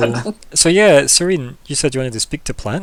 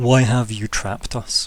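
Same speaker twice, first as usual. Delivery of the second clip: very deep voice, much lower; 3 semitones lower, 3 dB quieter than usual. Voicing the prisoners who all speak as one, in a very deep voice. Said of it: "very um, deep voice that says".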